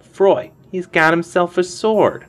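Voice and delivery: whining pipe-up, very high and very loud. Narrating a standoff, one of the young toughs pipes up in a whining voice. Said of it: "A whining voice piped up".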